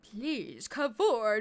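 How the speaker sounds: ominous, menacing tone. Voicing a game character's greeting to heroes, ominous. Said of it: "I should probably say it more ominously".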